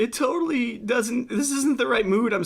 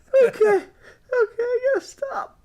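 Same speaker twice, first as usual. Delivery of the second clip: very high voice, words broken by giggling laughter; 13 semitones higher than usual. Apologizing for a laughing fit before recording starts: laughing fit while talking. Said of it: "I'm there right now".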